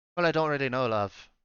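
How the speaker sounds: put-on, attempted Irish accent, homely. Redoing a woman's line after being reminded she was Irish, attempted Irish accent. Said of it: "She was Irish".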